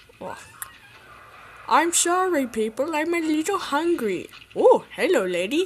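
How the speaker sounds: high, put-on dinosaur voice. Speaker performing as a hungry dinosaur talking to people, in a dinosaur voice. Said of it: "I'm going to be doing the voice of the dinosaur".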